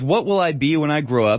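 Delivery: ordinary talk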